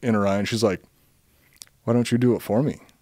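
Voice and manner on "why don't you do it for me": put-on playful tone. Retelling what the pop star said looking down at him: imitating a playful ask. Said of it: "she gets this kinda playful look in her".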